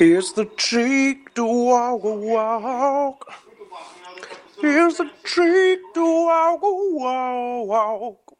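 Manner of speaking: put-on monster voice. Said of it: "this voice kinda sounds like the hormone monster on Big Mouth".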